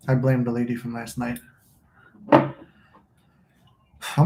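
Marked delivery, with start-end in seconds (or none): 2.3-4.3 heavy breathing, near whisper. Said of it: "like, breathing heavy".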